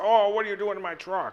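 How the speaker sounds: high, wild, odd, crazy put-on voice. Retelling how an actor first played a role, imitating his crazy voice. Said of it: "at first he was doing this crazy voice".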